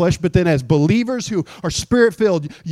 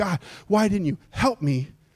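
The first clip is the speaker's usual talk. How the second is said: weeping, tearful, crying pleading; 6 dB quieter than usual. Imitating a churchgoer coming into church crying: imitating someone crying. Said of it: "you wouldn't have to come into church crying".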